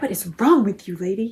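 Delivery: put-on cat voice. Voicing a cat that hissed at the returning speaker: voicing Mishka the cat. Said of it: "Mishka hissed at me".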